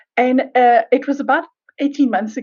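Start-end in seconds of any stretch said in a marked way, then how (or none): none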